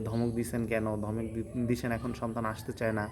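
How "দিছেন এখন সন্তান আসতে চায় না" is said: normal talking voice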